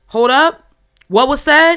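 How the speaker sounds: very loud, high yell, cutting in. Describing a sudden turning point, imitating God stepping in. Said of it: "God walking up to the situation like".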